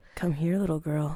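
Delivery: put-on creepy man voice. Imitating a man calling from his car: imitating a creepy man. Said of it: "why did he say it like that?".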